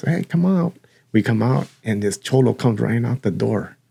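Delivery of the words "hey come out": put-on, high yell calling out across a distance. Retelling a mother calling the kids out during a commotion: imitating someone yelling. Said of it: "So she's yelling for us".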